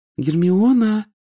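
very high, careful, cautious calling voice. Ginny calls to Hermione, who still hasn't turned around, calling cautiously. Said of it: "осторожно позвала Джинни".

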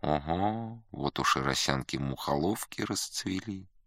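soft, quiet, offhand passing remark. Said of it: "говорю тихонько".

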